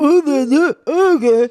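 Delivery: put-on catty man voice. Speaker shows her impression of men when being catty, mock-catty impression of men. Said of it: "my impression of like men".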